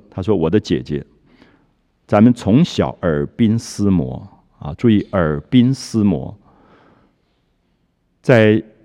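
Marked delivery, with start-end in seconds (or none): none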